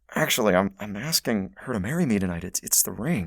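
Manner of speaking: secretive, hushed, confiding half-whisper. Retelling what he said to the man who pulled him over, retelling a half-whisper. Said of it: "I just kind of whispered to the guy".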